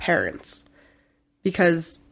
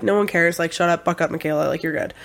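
ordinary delivery

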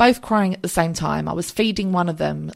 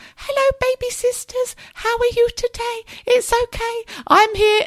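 tiny, very high, creepy-cute voice. Speaker imitates how she greets the baby sisters; little high-pitched creepy voice. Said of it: "little high-pitched, creepy voice like this".

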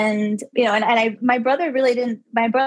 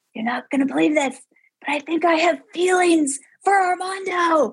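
acted-out mock whisper at higher pitch; 6 semitones higher than usual. Telling of confiding to a best friend in a loud bar: retelling a whisper. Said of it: "I'm like whispering".

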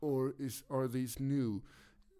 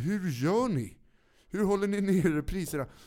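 mock thrilled, beside-himself, loud, drawn-out overexcited eagerness; 6 semitones higher, 8 dB louder than usual. Retelling a buyer questioning the shop owner: imitating an overexcited man. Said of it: "Han var helt till sig och bara".

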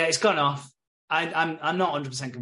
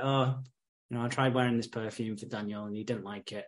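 mock speaking through tears, crying voice; 4 semitones lower, 5 dB quieter than usual. Retelling a show scene where a girl comes home crying: imitating someone in tears. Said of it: "She's in tears".

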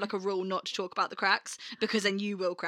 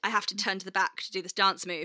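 ordinary talk, nothing marked

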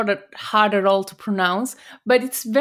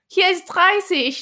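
pitched-up put-on scolding shout; 8 semitones higher than usual. Telling how she yells at speeding cars, imitating her shout. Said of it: "and then she shouts".

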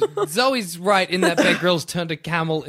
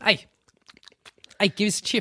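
put-on goblin voice, pitched much higher; 4 semitones higher, 3 dB quieter than usual. Imagining creatures coming up to someone at the beach, in goblin voice. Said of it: "a couple goblins coming up to you and being like".

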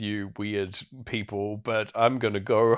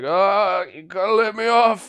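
put-on very high, loud, drunken pleading voice; 10 semitones higher, 5 dB louder than usual. Retelling a scene where he stumbles around on a bus: imitating a drunk man. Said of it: "as if he's, like, drunk off his face".

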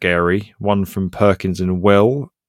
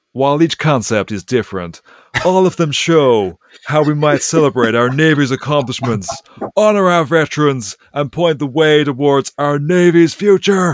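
put-on American military officer's accent, pitched up; 7 semitones higher, 4 dB louder than usual. Reading out a quote from the US Secretary of the Navy: put-on American accent. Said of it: "only if you do it in that accent".

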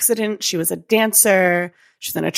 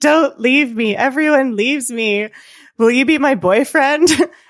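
high-pitched, raised yell; 7 semitones higher, 6 dB louder than usual. Retelling someone speaking as the daughter to a man, retelling a yell. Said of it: "starts yelling at him saying".

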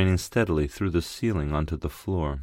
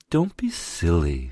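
soft cooing delivery. A woman pulls the narrator away from the mirror, cooing. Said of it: "she cooed".

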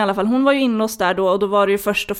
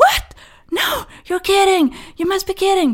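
play-acted, very high hysterical wailing, screaming and sobbing; 11 semitones higher than usual. Retelling how a woman reacted to shocking news, imitating someone screaming. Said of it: "verkligen bara vrålar".

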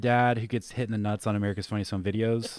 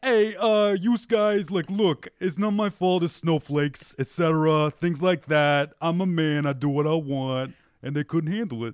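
put-on tough-guy voice with Staten Island accent; 6 semitones higher, 4 dB louder than usual. Doing an impression of a contestant explaining his removal: imitating Joe R. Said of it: "I did an impression of what I thought he sounded like".

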